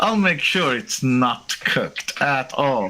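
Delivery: words pushed through clenched, gritted teeth. A server answers a customer's demanding order, through gritted teeth. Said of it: "she says through gritted teeth".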